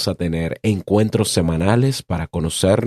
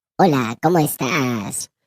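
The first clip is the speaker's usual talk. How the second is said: voice run through a pitched-up effect; 6 semitones higher than usual. Showing listeners how the new voice effect sounds: voice effect on the voice. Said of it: "si en algún momento me escuchas hablar así".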